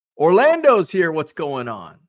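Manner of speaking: ordinary delivery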